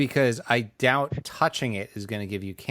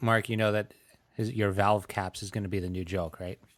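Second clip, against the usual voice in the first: plain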